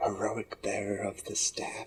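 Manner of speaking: very soft, thrilled, excited murmur under the breath. In a role-play, a character reacts to being given a title, said under his breath. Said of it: "says under his breath".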